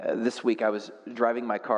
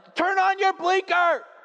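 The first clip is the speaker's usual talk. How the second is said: very high, shrill, loud, angry shouting; 6 dB louder than usual. Retelling turning without a blinker, the speaker imitates the guy who got mad: imitating a man yelling. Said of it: "he's like yelling at me".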